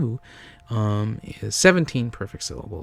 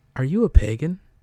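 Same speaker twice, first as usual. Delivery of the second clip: public radio announcer voice, slightly high; 5 semitones higher, 4 dB louder than usual. Performing a bit with a co-host; NPR voice. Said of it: "we're going to do it in our best NPR voices".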